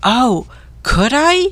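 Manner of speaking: eager mouse voice exclaiming. Narrator reads the mouse answering when asked if he wants the cage, exclaiming. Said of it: "exclaimed the mouse".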